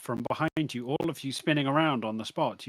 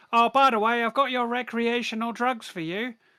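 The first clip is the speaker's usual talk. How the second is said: very high, squeaky little gnome voice; 10 semitones higher, 4 dB louder than usual. Voicing a gnome waiter who hands over drugs: gnome waiter voice. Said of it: "the little gnome waiter, who's like".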